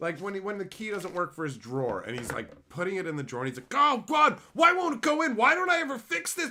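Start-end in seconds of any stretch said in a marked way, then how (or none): 3.7-6.5 shrill, very loud, exasperated, agitated outburst. Retelling a sitcom scene where a drawer key won't work: imitating an agitated inner voice. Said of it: "the internal voice of the agitated".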